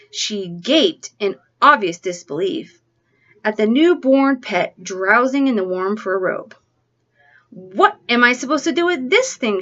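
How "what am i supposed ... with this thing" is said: shrill, piercing, insistent, demanding tone. Reading a sister's reaction to the newborn pet her brother gave her, shrill demanding voice. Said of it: "she demanded in a shrill voice".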